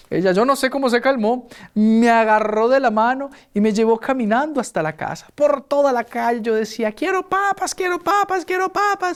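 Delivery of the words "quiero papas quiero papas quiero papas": put-on child's tantrum screaming, higher. Retelling a childhood tantrum in the town square: imitating a child's tantrum shout. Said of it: "y gritaba".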